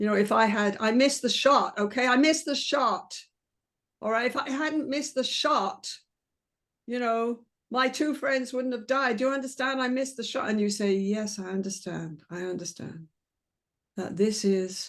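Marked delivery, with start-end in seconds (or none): 10.9-14.9 deep, low, unhurried, deliberate voice. Showing how to answer someone who missed the shot: low and slow voice. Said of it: "I've already dropped my voice and gone low and slow".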